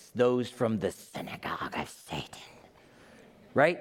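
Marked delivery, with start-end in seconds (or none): 0.1-2.4 hushed, rough, raspy reading voice. Reading a passage aloud the way it should be read, raspy voice. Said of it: "you kind of have to read it with a raspy voice".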